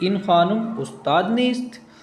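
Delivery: rising question-like tune ending on nist. Reading a sentence that ends in a question mark, with questioning intonation. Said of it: "इस उस लहजे में पढ़ना है जैसे हम सवाल कर रहे हैं".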